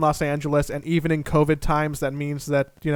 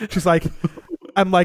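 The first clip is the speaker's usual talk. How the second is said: plain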